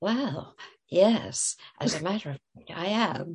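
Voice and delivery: very small, slow, quiet little voice. Retelling the group's reply to a man who came tearing up, in a very small voice. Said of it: "said in a very small voice".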